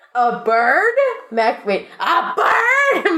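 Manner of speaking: very slow, stunned, swooping alarm. Mac reacts to a radio call about a bird circling them, alarmed. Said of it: "Mac says in alarm".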